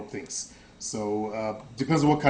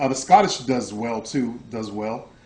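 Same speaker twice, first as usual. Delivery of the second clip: ordinary delivery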